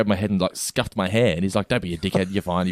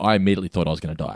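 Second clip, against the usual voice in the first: ordinary talk, nothing marked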